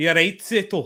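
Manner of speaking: casual, put-on attempt at a Scottish accent. Asked which accent they do well, addressing someone: put-on Scottish accent. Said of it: "I can do a good Scottish accent".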